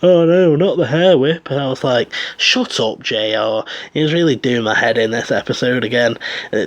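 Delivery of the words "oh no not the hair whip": mock heavy sarcasm, pitched up. Quoting someone's reaction to a hair whip in a match, imitating heavy sarcasm. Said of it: "in the most sarcastic voice possible".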